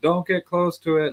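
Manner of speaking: high-pitched, loud yelling. Retelling how a lady warned people away from her loose dog: imitating someone yelling. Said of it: "She's yelling at people".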